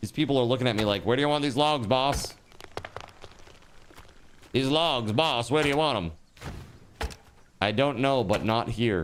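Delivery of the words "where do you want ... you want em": put-on 1930s old-timey beat reporter voice. Voicing game workers asking where to put logs: 1930s beat reporter voice. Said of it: "they sound like a beat reporter from the thirties".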